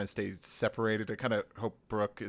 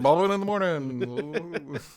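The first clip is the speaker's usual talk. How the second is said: jaw-jiggling radio voice, pitched up, drawn out; 7 semitones higher, 8 dB louder than usual. Showing how the radio bit should sound: Bobbin in the Morning voice, jiggling jaws. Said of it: "jiggle your jaws a little bit more?".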